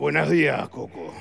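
rasping, creaky grim reaper character voice. Asked to do the little voice, the actor greets Coco in La Parca character voice. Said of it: "Haceme la vocecita".

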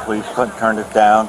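ordinary delivery

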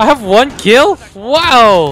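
thrilled, high, very slow, long drawn-out "wow". Reacting to seeing one kill in a shooter match: really excited. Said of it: "He sounded really excited".

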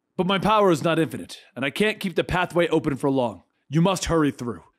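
ordinary delivery, nothing marked

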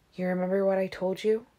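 ordinary delivery, nothing marked

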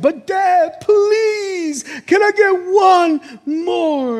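put-on very slow, high, drawn-out pleading little-kid voice. Telling how he limits his daughter's Oreos: imitating his daughter begging for one more. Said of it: "And she's like".

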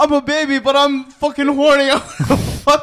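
loud, shrill, high cartoon voice yelling. Announcing a surprise appearance in the skit: Stewie Griffin voice. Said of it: "Stewie Griffin".

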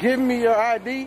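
ordinary talk

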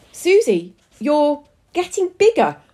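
drawn-out high shouting. Reading a story aloud, one character shouts to another: shouting. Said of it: "Ronnie shouted".

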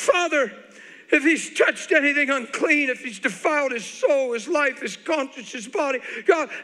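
said loudly. Recounting praying over a man with a hand on his head, retelling a loud prayer. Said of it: "I said with a loud voice".

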